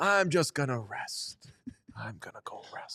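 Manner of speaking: whispered, breathy voice. Imitating John Henry saying he is going to rest: John Henry impression. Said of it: "John Henry says the word rest a bunch".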